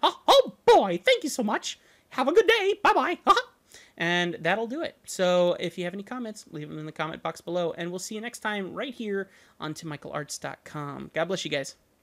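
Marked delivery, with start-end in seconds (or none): 0.0-3.2 squeaked high and loud, pitch swooping. Signing off a video with a very quick impersonation, Mickey Mouse voice. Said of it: "a very quick Mickey Mouse impersonation".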